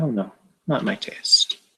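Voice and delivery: very quiet, soft, hushed little murmur. Voicing a character who turns down an offered cigarette: answering very quietly. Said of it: "just answers very quietly".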